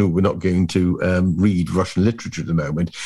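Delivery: ordinary delivery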